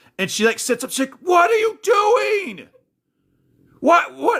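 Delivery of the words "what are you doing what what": acted very high, loud yelling, words stretched out. Retelling a late-night medicine mix-up, imitating Danny yelling. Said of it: "Why are you yelling at me?".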